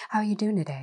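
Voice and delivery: put-on calm radio voice. Speaker demonstrates calmly checking on someone, in a calm SNL NPR voice. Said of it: "like SNL NPR voice is what I think of it as".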